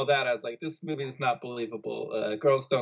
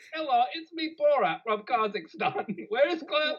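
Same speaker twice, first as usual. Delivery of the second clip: very high, weird, attention-seeking voice; 11 semitones higher than usual. Mocking a student in a scene as Borat: Borat voice. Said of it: "weird Sacha Baron Cohen character".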